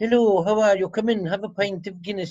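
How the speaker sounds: gentle, welcoming southern Irish accent. Speaker contrasts northern and southern accents, soft southern Irish accent. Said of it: "Unlike the Southern accent".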